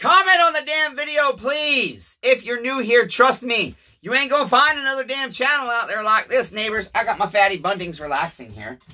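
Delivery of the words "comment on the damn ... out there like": loud, very high raised voice. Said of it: "because I'm raising my voice".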